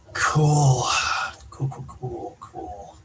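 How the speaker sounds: voice full of pain. Answering over a call that keeps cutting out, with pain in the voice. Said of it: "pain in your voice".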